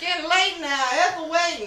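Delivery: put-on elderly woman voice, slow and high.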